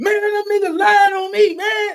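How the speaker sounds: loud, very high, drawn-out top-of-the-lungs hollering. Imitating people who get upset over the internet: imitating someone yelling at top of lungs. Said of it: "yelling at the top of their lungs".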